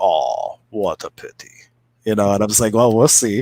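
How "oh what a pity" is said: put-on very slow, halting, low broken German accent. Retelling a father-in-law's remark as rain hits their new fire, in a broken German accent. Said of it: "in his broken German accent".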